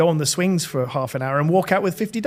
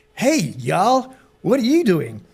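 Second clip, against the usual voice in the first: swooping, put-on American surfer-dude accent; 4 semitones higher than usual. Quoting an old surfer dude who stopped: put-on American accent. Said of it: "this is my American accent".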